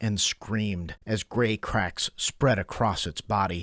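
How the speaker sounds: ordinary delivery, nothing marked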